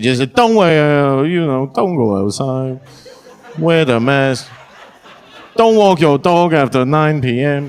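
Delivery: put-on Chinese accent on every word. Speaker retelling a famous woman's repeated advice lines, done in a Chinese accent. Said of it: "but in a Chinese accent".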